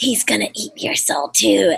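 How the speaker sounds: slow, drawn-out, rough, creaky demonic possessed rasp. Retelling a scare role at a haunted event: possessed Mia voice from Evil Dead. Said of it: "make my voice sound like that".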